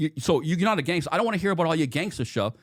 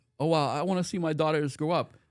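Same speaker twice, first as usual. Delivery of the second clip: weepy, tear-soaked, crying pleading; 4 dB quieter than usual. Retelling a witness on the stand answering the lawyer: imitating a witness crying. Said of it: "she's crying".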